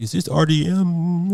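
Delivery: put-on slow French accent. Retelling how a persistent caller from a weird number greeted him, French accent. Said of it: "French accent".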